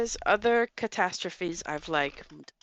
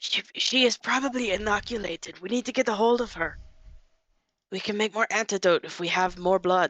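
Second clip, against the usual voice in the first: whispering; 3 semitones higher than usual. Whispering to the other players' characters about getting her blood: whispering in character. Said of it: "I whisper to my, my friends".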